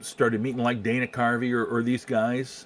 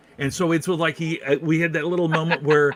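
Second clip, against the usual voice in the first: ordinary talk, nothing marked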